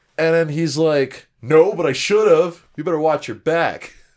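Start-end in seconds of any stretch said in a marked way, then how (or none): 1.4-3.9 put-on, menacing, veiled threatening tone. Recapping a scene where a guy answers a girl's accusation, mock threatening. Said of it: "Flash Thompson threatening the freshman girl".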